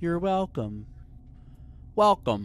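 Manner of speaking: automated computer voice, online-service style. Saying welcome, trying to sound like the AOL voice. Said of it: "trying my best to sound like the A O L voice".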